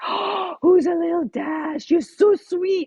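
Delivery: put-on ridiculous baby talk, high pitched and drawn out. Retelling how they won over their son's dog: retelling ridiculous baby talk to the dog. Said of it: "And I did it like so ridiculous".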